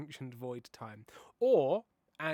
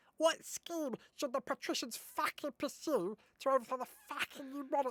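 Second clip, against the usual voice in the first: very high-pitched, cartoonish put-on British accent; 11 semitones higher than usual. Showing what a voice called British Stitch sounds like: British Stitch voice. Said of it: "British Stitch sounds like this".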